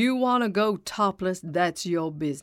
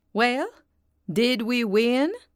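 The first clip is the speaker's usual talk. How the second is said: insistent, pressing tone, pitched up; 5 semitones higher, 3 dB louder than usual. Eileen demands an answer from Quincy: demanding. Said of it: "Eileen demanded".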